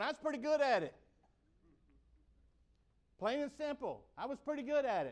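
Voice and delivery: open revulsion in voice. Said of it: "I say that with disgust in my voice".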